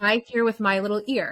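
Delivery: ordinary delivery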